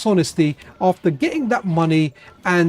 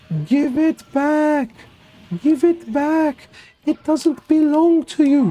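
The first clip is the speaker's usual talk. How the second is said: eerie put-on ghost voice, high and slow; 8 semitones higher than usual. Shouting between supermarket aisles at a guy, ghostly voice. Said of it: "in a very very ghostly voice".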